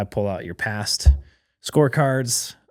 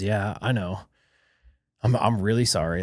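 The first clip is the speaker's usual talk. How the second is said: put-on polite, nice tone, slower. Speaker retells a late worker's reply, imitating a nice apology. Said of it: "Like really nice about it".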